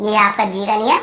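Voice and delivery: normal talking voice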